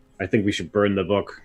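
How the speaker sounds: muttered quietly under the breath. Voicing a character speaking to Rick Jacks: under his breath. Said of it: "he says to Rick Jacks under his breath".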